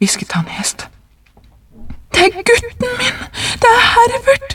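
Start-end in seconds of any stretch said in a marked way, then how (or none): 2.1-4.6 very high, struggling outcry. A woman struggles to break free from a man gripping her arm, crying out while struggling. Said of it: "ropte hun og kjempet for å komme løs".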